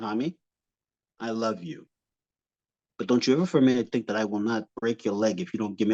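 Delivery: put-on loving, affectionate tone. Retelling what she told him about money after they married, imitating a loving tone. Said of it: "she said it very, very lovingly".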